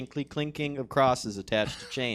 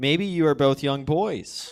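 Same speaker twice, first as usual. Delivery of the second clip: ordinary talk, nothing marked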